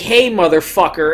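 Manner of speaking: mock indignant outburst. Retelling how an outsider acts toward city workers: imitating someone acting indignant. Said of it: "acting all indignant, being like".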